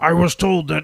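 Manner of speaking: harsh, gravelly, raspy voice, loud and high. Trying a conspiracy theory bit: bad gravelly Alex Jones voice. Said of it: "mostly just do a gravelly voice for him".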